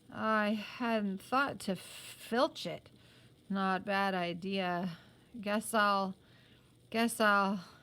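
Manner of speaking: put-on thick, slurred, groggy speech. Reading a story aloud, a boy groggy from a blow: speaking thickly, groggy. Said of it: "Rab said thickly".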